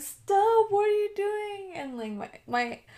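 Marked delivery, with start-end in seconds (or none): 0.0-1.7 put-on, high, tearful, sobbing crying voice. Retelling a brother walking in a second time: imitating someone crying.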